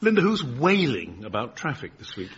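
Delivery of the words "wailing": heavy emphasis on the word wailing. Asking about this week's traffic, stressing the word 'wailing'. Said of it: "you stressed the word wailing".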